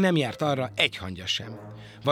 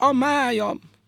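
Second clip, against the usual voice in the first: very high, shrill, loud pained outcry; 11 semitones higher, 5 dB louder than usual. The badger, while the fox keeps snickering, cries out in pain. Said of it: "fájdalmasan felkiáltott".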